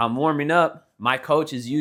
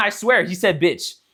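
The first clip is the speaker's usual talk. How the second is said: plain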